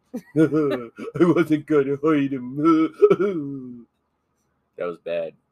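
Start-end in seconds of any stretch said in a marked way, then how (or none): 1.2-3.9 slow, laughing put-on character voice, drawn out. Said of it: "I'm not gonna do my impersonation".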